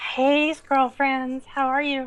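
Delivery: slightly hoarse voice. A guest greets the hosts right after being introduced, hoarse voice. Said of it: "I've got a little bit of a hoarse voice".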